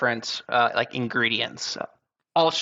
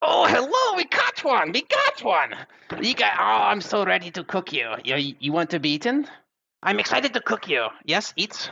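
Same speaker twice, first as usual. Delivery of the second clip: high gnome character voice with swooping pitch; 8 semitones higher than usual. Narrating a scene where a gnome walks through the door and speaks: gnome voice. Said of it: "and it is a gnome, and he says".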